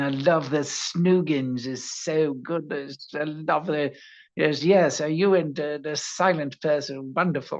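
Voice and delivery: slow, obsequious, creepy fawning voice, English-sounding.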